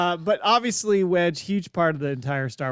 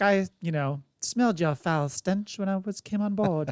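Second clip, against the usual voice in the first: snotty, royal-sounding, affected put-on accent; 2 semitones higher, 4 dB quieter than usual. Recalling a character's line from a film scene, imitating a snotty accent. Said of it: "then just the snotty woman came out".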